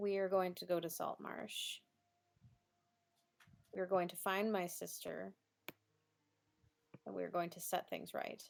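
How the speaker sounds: very soft, hushed, quiet delivery. Speaking in character while holding another character's replacement hand: very quiet. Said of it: "she says very quietly".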